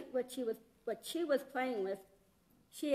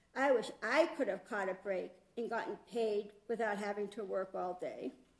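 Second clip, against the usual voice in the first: put-on sulky, pouty voice; 4 semitones lower than usual. Picturing the all-day workers complaining about their break: mock-pouty voice. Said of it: "saying with a pouty voice".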